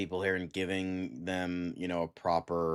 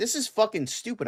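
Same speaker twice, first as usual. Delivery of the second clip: mock very high, loud, fed-up indignation; 5 dB louder than usual. Retelling what he said back in a group chat argument, mock-angry quote. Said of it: "Why are you mad?".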